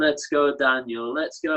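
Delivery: ordinary delivery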